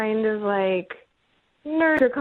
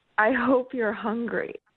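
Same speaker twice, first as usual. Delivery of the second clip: imitated whisper. Retelling what a guy said in the bedroom: imitating a whisper. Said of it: "he just whispered to me".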